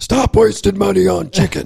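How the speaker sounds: rough-edged, intense voice. Imitate the guy who teaches people to save money on groceries, as the most intense man. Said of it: "his voice sounds like the most intense man".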